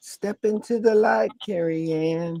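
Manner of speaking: small, high little-lady voice. Speaker quotes the movie, doing the Poltergeist little lady voice. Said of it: "that little lady from Poltergeist doing that voice".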